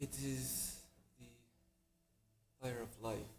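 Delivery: put-on German accent. Voicing a tiefling explaining what a symbol means: german accent. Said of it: "Now you're going German".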